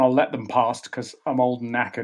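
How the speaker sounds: normal talking voice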